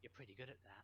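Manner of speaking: hushed, soft half-whisper. Walking past him, she is half-whispering into his ear. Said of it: "she just whispers into his ear".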